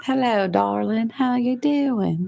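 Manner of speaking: put-on American Southern accent. Asked by another speaker to show a voice, a southern accent. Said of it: "do the Southern accent".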